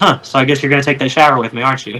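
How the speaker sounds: straight-faced, dry deadpan delivery. Retelling the wife's answer to the accident, imitating a deadpan reply. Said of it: "looks at me with a straight face and goes".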